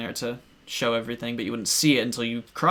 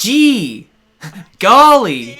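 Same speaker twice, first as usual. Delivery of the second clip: put-on cartoon hero voice, higher and louder; 9 semitones higher, 14 dB louder than usual. Imitating how CD-i Link talks, like a goofy cartoon hero. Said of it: "C D I Link, he's like".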